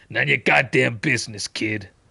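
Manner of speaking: dismissive, brushing-off comic antihero voice. Reading a game line in a different character's voice: Punisher voice. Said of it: "Could read that in Punisher's voice instead".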